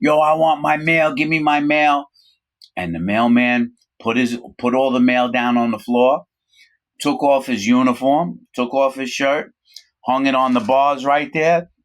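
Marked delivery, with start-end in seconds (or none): 0.0-2.1 mild, insistent, demanding hollered yell, acted out. Retelling how a prisoner screamed at the mailman: imitating someone screaming. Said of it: "Shah started screaming at him".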